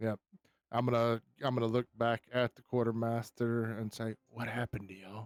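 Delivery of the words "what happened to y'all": soft, hushed, under-the-breath voice. Playing your character in a game, asking the quartermaster: quiet. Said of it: "Just quiet, you know, quietly".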